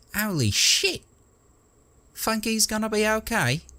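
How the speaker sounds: pinched nasal tone, pitched very high. Reading a story aloud, voicing Nubby's line after a silence, nasal voice. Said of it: "Nubby's nasal voice".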